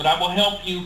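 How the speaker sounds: ordinary talk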